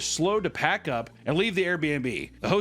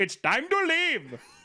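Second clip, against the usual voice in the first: put-on Indian accent, pitched very high; 10 semitones higher than usual. Speaker quotes the host's husband pushing guests out, in a mock Indian accent. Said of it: "It's Indian".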